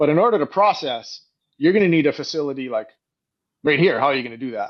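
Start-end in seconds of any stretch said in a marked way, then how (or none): none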